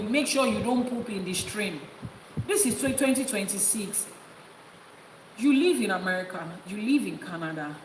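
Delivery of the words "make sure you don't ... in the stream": ordinary talk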